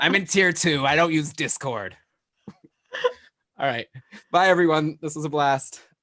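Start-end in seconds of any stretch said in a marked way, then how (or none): 0.0-2.0 put-on old person voice. Joining the other speaker's bit, the speaker imitates an old person. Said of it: "It's like an old person".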